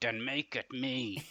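menacing words forced through clenched teeth. Recapping a scene and voicing his reply to her, retelling a line through gritted teeth. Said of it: "he says through gritted teeth".

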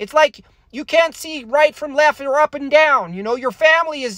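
very high-pitched puppet voice. A speaker gives an impression a try, talking in a Kermit the Frog voice. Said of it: "I'm talking little green puppet".

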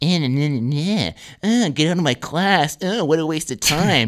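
put-on mocking mimicry. Retelling a classmate quietly mocking a teacher: imitating a quiet mocking impression of a teacher. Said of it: "mocking her hand gestures and going like".

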